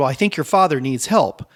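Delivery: worried, alarmed voice. Retelling a stranger's warning to a brother about his father: imitating an alarmed tone. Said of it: "he said it in a tone of, like, you know, something's wrong".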